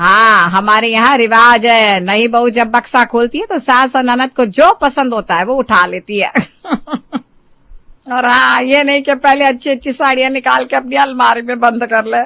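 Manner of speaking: domineering cartoon-style, bossy, sharp-tongued voice. Mother-in-law in a cartoon family comedy, speaking before her new daughter-in-law, bossy.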